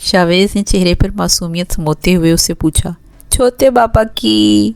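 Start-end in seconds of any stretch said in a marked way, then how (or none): 3.3-4.7 put-on lisping toddler baby talk, higher. Reading a story aloud, a little girl answers her uncle: lisping child talk. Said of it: "शफ़ा ने तुतलाते हुए कहा".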